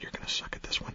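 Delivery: soft, whispered, teasing aside.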